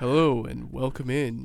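sultry late-night radio DJ voice, deep and slow. Greeting listeners with a welcome, DJ Handsome Hands voice. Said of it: "you kind of went like a deep, sexy, like... You sounded like DJ Handsome Hands right there, like".

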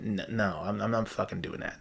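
normal talking voice

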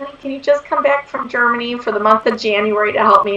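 ordinary delivery

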